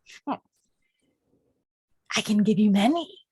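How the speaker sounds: amused monster voice, chuckling and laughing through it. The narrator voices a creature answering the players: chuckling creature voice. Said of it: "the creature looks at you and chuckles and goes".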